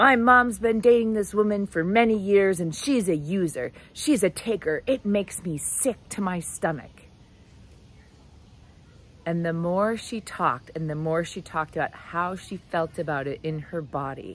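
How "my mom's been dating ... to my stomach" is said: play-acted furious, heated, very angry griping. Speaker retelling a woman overheard while working out, mock-angry retelling. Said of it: "she's using this very angry voice".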